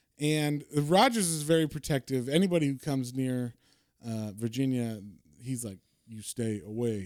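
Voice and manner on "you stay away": terse, quieter put-on character voice. Describing a protective character who warns anyone near Virginia away: terse, monosyllabic Rogers voice. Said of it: "or he's very monosyllable".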